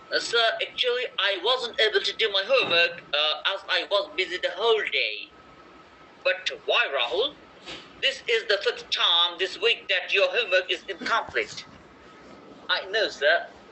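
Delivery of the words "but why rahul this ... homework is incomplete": put-on British accent. Acting a teacher's line in a homework dialogue, in a british accent. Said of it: "প্রথম এ পড়ছি ব্রিটিশ অ্যাকসেন্ট এ।".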